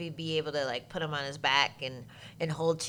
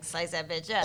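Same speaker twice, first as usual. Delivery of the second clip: plain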